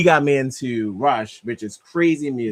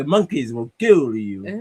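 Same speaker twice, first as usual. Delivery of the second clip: put-on partial Romanian accent, put on. Imitating an actor's odd accent from a movie: Jon Voight's Anaconda accent. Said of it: "He's like a vampire".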